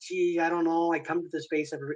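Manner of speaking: put-on halting, hesitant, mock-unsure voice. Describing someone on the fence coming to the space, in a put-on hesitant voice. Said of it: "I don't know why I'm using a voice like that".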